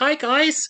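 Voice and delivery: loud squeak way up high. Showing how a little rat character talked: Avam's voice. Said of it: "he talked like this".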